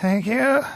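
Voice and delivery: acted, out-of-breath, breathless, winded delivery. Retelling a struggling lady's reply: imitating someone out of breath. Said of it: "she's totally out of breath".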